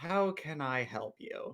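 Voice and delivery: slow, very exasperated tone. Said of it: "in a very exasperated tone".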